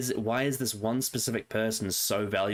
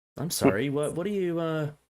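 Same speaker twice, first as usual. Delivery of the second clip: put-on polite server voice, higher; 6 semitones higher than usual. Retelling a scene where Walt presses the restaurant manager: Gus's polite serving voice. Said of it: "he's speaking like someone who's serving".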